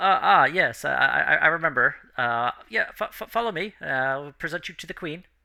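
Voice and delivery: nervous stuttering voice. Voicing a young guard in training who halts the players: nervous stuttering guard. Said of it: "his voice is a bit shaky".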